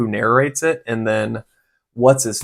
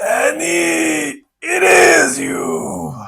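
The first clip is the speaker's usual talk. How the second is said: put-on dying creature voice, higher. Switching to a new impression after a goblin voice: Watto voice on death's door. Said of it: "Now I'm doing a Watto".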